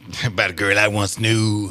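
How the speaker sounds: blues singer-style voice. Starting to tell the listeners a story, blues voice. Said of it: "so that's my blues voice".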